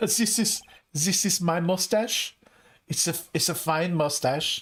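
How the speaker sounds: put-on German accent, put on and laid on. Quoting a movie scene to the other speaker, in a german accent. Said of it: "the only German accent I could do".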